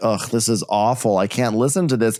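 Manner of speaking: ordinary talk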